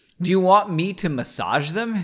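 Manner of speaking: ordinary delivery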